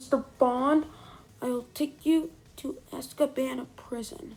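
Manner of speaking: clumsy, bad put-on British villain accent. Reviewing a movie, the speaker quotes the main villain in a dr. no impression. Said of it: "he talks like this".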